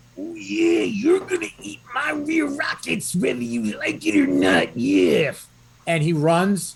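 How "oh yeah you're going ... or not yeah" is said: very high, swooping wrestling-promo style voice. Playing a character who charges an enemy, quoting Macho Man: Macho Man voice. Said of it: "this is a real Macho Man quote".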